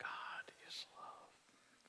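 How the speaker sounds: hushed, soft, breathy whisper. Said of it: "I want you to whisper it".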